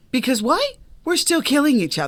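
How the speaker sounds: mock-innocent sarcastic tone. Answering own rhetorical question in a conversation: sarcastic. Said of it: "I'm saying that sarcastically".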